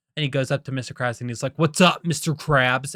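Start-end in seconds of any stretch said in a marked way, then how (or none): 1.6-3.0 cool, swaggering tough-guy voice. Retelling a movie scene, quoting SpongeBob: SpongeBob tough guy voice. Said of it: "tough guy persona".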